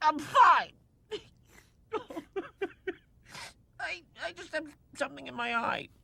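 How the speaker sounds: crying, tearful voice. Answering a friend who asks if he is crying: crying. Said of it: "Timon, are you crying?".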